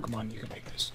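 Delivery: soft, unvoiced, urgent, pressing whisper.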